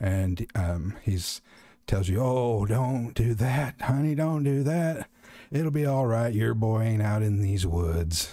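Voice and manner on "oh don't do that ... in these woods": put-on voice of an elderly man. Voicing a strange voice that tells a player to stop: old man's voice. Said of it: "it's an old man's voice".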